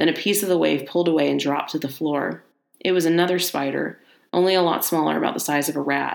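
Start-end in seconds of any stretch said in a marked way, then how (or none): none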